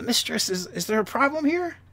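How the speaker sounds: small, high goblin creature voice. Narrating a little goblin peering around her hip and speaking: small goblin voice. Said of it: "a small voice from behind her as a little goblin".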